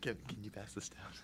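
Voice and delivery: hushed, soft, very quiet, barely-there whisper. Asking another speaker to pass something down: soft whisper. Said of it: "such a soft whisper".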